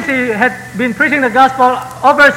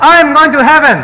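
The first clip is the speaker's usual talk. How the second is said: joyful, mildly raised shout. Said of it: "He raised his two hands and shouted".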